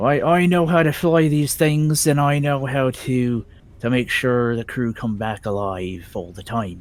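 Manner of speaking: put-on middling Irish pirate accent. Playing a character, the speaker attempts a middling irish pirate accent. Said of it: "pirate with a sort of a middling Irish slash".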